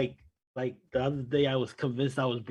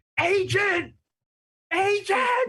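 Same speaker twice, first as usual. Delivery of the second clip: mock very high, loud, fed-up frustrated screaming; 5 dB louder than usual. Describing screaming at the phone to reach an agent, retelling screaming at phone. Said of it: "I'm screaming at my phone".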